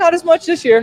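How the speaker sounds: squeaky, very high-pitched voice. Answering a remark about the other team while watching a match: very high-pitched voice. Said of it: "You said that in a very high-pitched voice".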